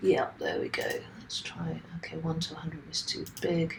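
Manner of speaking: soft, unvoiced whisper.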